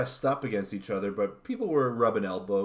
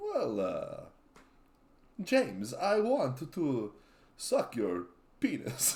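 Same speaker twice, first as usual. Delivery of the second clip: slow, high-pitched drawl swooping up and down; 6 semitones higher than usual. Leaning into the impression after being told it sounds like Dracula: Dracula-like impression. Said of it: "yours sounds like Dracula".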